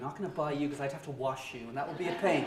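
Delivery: ordinary talk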